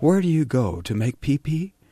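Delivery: high, loud, condescending mother voice. Retelling what a woman said to the Ayatollah, in the voice of his mother. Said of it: "she said in the voice of his mother".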